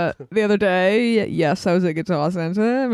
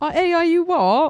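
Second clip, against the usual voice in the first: put-on high, slow British accent.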